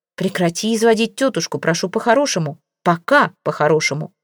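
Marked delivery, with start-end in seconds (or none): none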